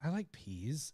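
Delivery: tiny, very quiet small voice. Retelling what Lowry said when left out of the game: small voice, to himself. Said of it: "in a small voice, just like to himself".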